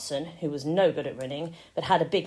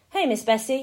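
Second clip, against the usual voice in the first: calming, soothing, settling, pitched-up voice; 8 semitones higher than usual. Climbing into the cow field, he calms a sleepy cow; soothing. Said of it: "Jess said soothingly".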